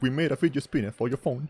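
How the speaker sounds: put-on very heavy, thickly laid-on British accent. Quoting a British guy in a YouTube ad: super thick British accent. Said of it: "a super thick British accent".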